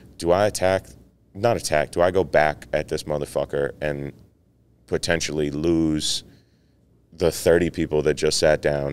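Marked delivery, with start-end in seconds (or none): none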